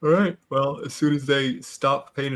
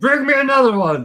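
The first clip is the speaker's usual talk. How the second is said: shrill, all-out yell at full volume, very high; 11 semitones higher, 8 dB louder than usual. Playing a character in a bar, ordering a drink: yelling as loud as possible. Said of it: "as loud as I can, I want to yell".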